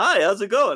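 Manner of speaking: fake forced-normal cheer. Retelling a ghoul freaking out on a clinic floor, mock forced-casual, unhinged. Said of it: "trying to be normal, but ... going insane".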